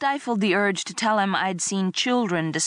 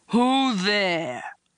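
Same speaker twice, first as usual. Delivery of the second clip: brutish growling monster voice; 3 semitones higher than usual. Narrator reads Quogg's call after a growl down the hall: bellowing. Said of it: "Quogg bellowed".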